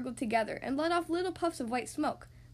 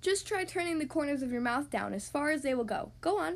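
plain reading voice

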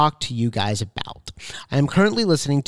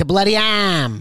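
put-on New England accent, high-pitched; 5 semitones higher than usual. Imitating a man who read a story aloud: put-on new england accent. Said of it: "New England accent".

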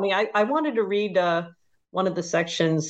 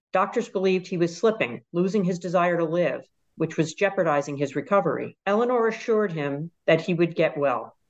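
usual speaking voice

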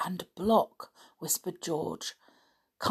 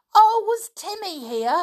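shrill, ringing, very high, loud joyful cry; 13 semitones higher, 8 dB louder than usual. On hearing that the dog had been there, someone cries out; joyful. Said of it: "cried George joyfully".

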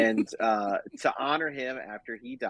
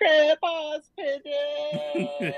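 put-on tiny, very high three-year-old's voice; 4 dB louder than usual. Retelling a film's ending where a little girl picks up flowers: imitating a three-year-old. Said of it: "a little kid, like, she's three".

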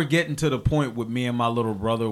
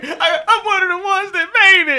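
put-on crying, much higher and louder. Retelling being taken to the station, the speaker repeats their own words, imitating own crying. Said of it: "And I started crying in the back of the car".

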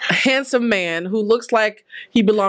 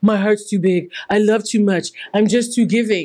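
self-satisfied, smug, conceited tone. Imitating someone telling a coach how much they love: conceited person. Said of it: "how conceited it sounds to a coach".

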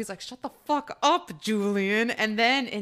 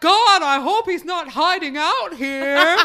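imitated loud talk, higher and louder; 6 semitones higher, 9 dB louder than usual. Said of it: "starts to talk really, really loudly".

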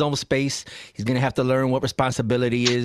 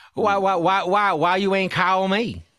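rough put-on Southern accent, pitched up; 6 semitones higher than usual. Imitating a woman asking why nobody called: put-on Southern accent. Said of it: "I can't do her accent".

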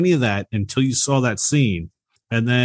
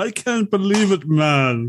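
put-on Jamaican accent, pitched up; 6 semitones higher than usual. Repeating a movie line he used to love doing, imitating a Jamaican accent. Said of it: "sounds like he's doing a Jamaican accent".

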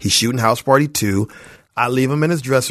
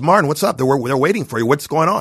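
mock commanding, bossy drill-sergeant manner; 2 semitones higher than usual. Retelling how a studio boss greeted Martin at the door: imitating Chris Albrecht's sergeant attitude. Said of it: "this little sergeant type of attitude".

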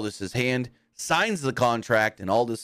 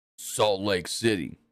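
deep, low, menacing, deliberate delivery; 3 semitones lower than usual. Act out Roman starting things off after Heyman hands him the microphone, in a deep, menacing Roman voice. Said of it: "and more like menacing voice".

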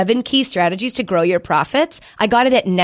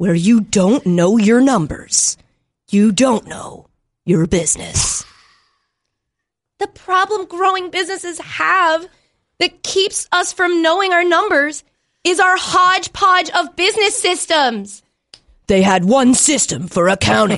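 movie trailer narrator voice, pitched higher; 7 semitones higher than usual. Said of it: "have movie trailer guy".

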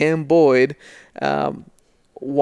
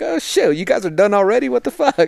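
upset, irritated outburst with raised pitch; 6 semitones higher than usual. Retelling a guest's reaction to the podcast ending early: imitating someone upset. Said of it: "He was all upset".

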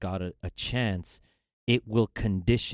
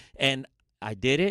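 plain

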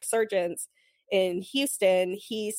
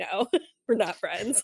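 mock bone-dry, deadpan, humorless delivery. Retelling a post-game interview answer: imitating Bregman's deadpan. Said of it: "kind of looked at the camera deadpan and was like".

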